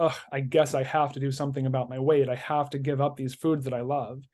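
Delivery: ordinary delivery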